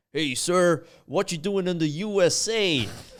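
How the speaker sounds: very loud, high, put-on American accent. Retelling a border patrol check, the speaker imitates the guard: American accent impression. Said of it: "That accent work is incredible".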